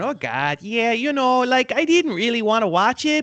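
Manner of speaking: put-on high, flat Buffalo accent. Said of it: "it's very Midwestern".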